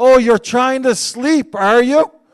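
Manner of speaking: loud, teasing delivery through laughter. Retelling how they mocked you for trying to sleep, imitating laughing teasing. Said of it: "they laughed harder".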